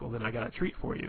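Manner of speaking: plain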